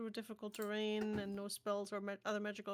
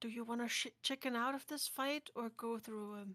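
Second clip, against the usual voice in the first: hushed whispered aside. A player's character turns to the others before a fight: whispering. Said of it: "turns to the others and whispers".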